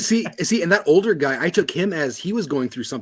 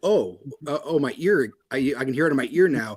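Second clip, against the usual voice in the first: usual speaking voice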